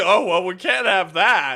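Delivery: mock sarcastic tone. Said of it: "It sounds so fucking sarcastic".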